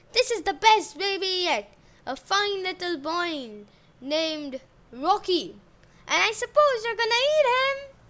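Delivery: loud, ringing shout that carries far. A wife marches up to King Cannibal and shouts. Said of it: "marched up to King Cannibal and shouted".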